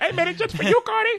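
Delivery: high-pitched put-on Indian accent. Trying the joke line again, put-on Indian accent sounding like a Muppet. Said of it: "I sound like a fucking Muppet".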